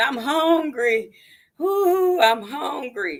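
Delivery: very drawn-out, high, pleading scream. Retelling how a man helped onto the train began, imitating him screaming. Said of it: "he starts screaming".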